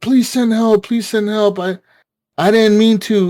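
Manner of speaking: high, put-on, desperate, frantic, panicked shouting. Retelling a man's phone call while a deputy chased him, retelling someone yelling. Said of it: "he's like yelling like".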